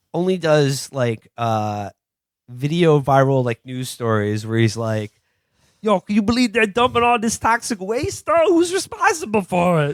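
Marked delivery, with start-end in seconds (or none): 5.8-9.9 put-on odd American accent, higher pitch. Joking about a reporter character in a movie: Tom Hardy voice. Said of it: "And I'm doing the voice".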